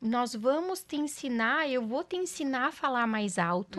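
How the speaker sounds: normal talking voice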